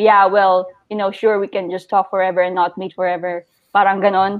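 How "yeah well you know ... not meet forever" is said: put-on snarky, sarcastic tone. Retelling a match's reply to wanting to talk first: imitating a sarcastic reply. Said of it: "he kinda answered sarcastically".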